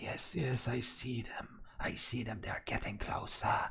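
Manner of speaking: a woman's very soft, hushed whisper. Voicing a woman who tells a man the others are getting closer: whispering woman character. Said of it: "she is whispering to the man".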